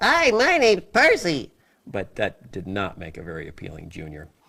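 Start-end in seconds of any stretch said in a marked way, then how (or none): 0.0-1.5 put-on very high, slow little kid voice. The speaker shows one of their little kid characters: Percy P. little kid voice. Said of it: "I do Percy P".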